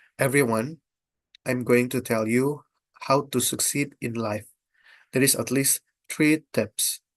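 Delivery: flat monotone with no pitch movement. Demonstrating the don'ts version of a speech opening: no intonation. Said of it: "The don't uh, if there's no intonation".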